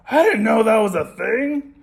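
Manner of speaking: high, put-on puppet monster voice. Teacher imitates last semester's students, in a Cookie Monster voice. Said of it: "I'm making a Cookie Monster voice".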